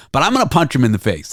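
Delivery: ordinary talk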